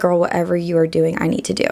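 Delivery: ordinary talk, nothing marked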